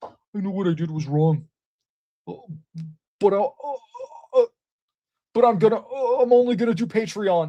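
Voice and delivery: sobbing, blubbering, high, tearful crying voice. Retelling a producer's public apology video: imitating someone crying. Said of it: "he's, like, crying".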